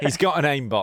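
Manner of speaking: normal talking voice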